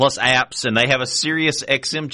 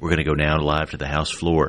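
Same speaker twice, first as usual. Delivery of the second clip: mock golf-announcer whisper, much lower; 8 semitones lower than usual. Speaker imitating one guy announcing the switch to the House floor, whispered golf-announcer voice. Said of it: "Golf announcer voice".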